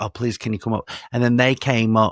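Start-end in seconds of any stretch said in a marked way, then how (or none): 0.0-0.9 put-on polite tone, quieter. Retelling asking hotel staff to come up: imitating own polite request. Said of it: "I went down politely".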